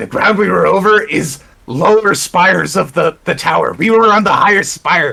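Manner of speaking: rough, scratchy, raspy put-on voice. Speaking in character to the group about the castle, in a scratchy voice. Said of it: "I'm gonna stop with the scratchy voice".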